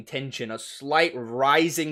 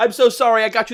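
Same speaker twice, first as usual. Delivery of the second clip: energetic, bubbly, airheaded, higher and louder; 8 semitones higher, 5 dB louder than usual. Acting out the character bursting in with flowers: energetic, ditzy apology. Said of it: "running in like a ball of energy".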